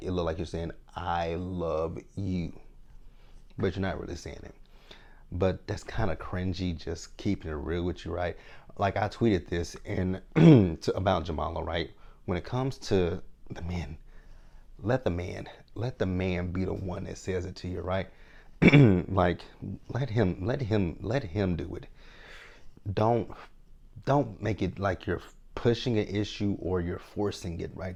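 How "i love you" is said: very slow, drawn-out delivery. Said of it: "when you say it slow".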